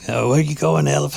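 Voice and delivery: high, rough, raspy, creaky smoker's voice. Retelling a woman narrating her video of an elephant: imitating a smoker's voice. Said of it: "had a smoker's voice".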